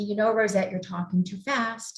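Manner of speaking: plain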